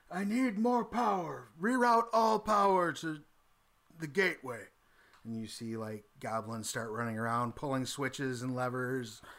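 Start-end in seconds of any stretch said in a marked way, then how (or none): 0.1-4.6 high-pitched, loud shouted delivery. Voicing a character ordering goblins to reroute power: shouting in character. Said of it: "starts shouting".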